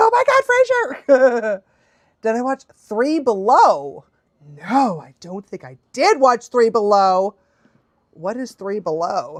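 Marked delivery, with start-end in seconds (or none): 0.0-1.6 play-acted very high, swooping, starstruck excited gush. Recalling finding out who voiced a character, the speaker is retelling own excitement. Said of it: "I was so excited. I was like".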